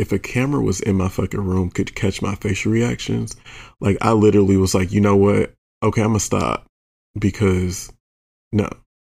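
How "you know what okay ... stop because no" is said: usual speaking voice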